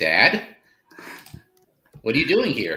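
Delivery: put-on sheepish, timid teen voice, swooping pitch. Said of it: "sheepishly like a teenager would".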